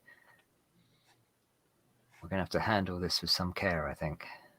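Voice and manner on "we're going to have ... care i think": very quiet, soft, fast hushed whisper. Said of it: "kind of lean in and very quietly say".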